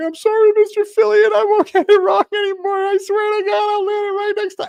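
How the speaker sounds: play-acted, very high, loud, tearful sobbing. Retelling an apology to a man yelling at the speaker, imitating own crying. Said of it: "and I just started crying".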